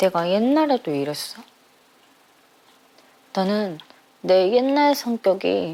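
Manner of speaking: crying while talking, tearful speech. Talking about how they were like this in the past, crying while talking. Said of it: "왜 울어 또?".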